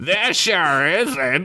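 put-on unhinged, crazy elderly man's voice. Narrator voices someone speaking right beside a character's ear, in a crazy old man voice. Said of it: "said a crazy old man voice".

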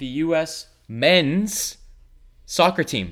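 emphasis landing on "men's". Joking about a United States sport that sucks, stress on men's. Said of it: "Notice what word I put emphasis on. Men".

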